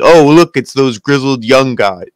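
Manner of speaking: flat, level, lifeless voice with zero energy. Mocking a commentator's bored call of a tag team's return: imitating Kevin Owens, flat and uncharismatic. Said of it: "That's literally what he said".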